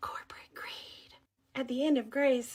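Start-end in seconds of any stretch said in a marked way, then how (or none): 0.0-1.1 very quiet, hushed whisper. Telling what to say when someone mentions the economy: whispering. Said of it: "I'm gonna whisper".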